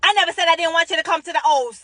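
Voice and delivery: shrill, very high, very loud shouting. Retelling what he said back to her, imitating him yelling. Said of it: "Then he yells".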